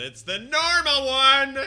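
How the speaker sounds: loud shouting yell. Showing how he sometimes yells a phrase: yelled loudly. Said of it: "I must have yelled it. You know when I sometimes go like this".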